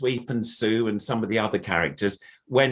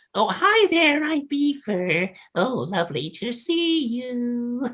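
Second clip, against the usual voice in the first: put-on puppet voice, much higher; 12 semitones higher than usual. Introducing another character, the performer greets everyone in Beaver puppet voice. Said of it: "this is my beaver puppet".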